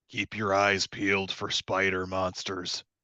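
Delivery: whispering quietly. Sneaking, a player character quietly warns the companions: quiet whisper. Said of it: "and very quietly inform them".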